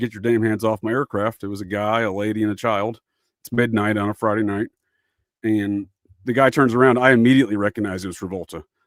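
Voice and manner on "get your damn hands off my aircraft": ordinary talk, nothing marked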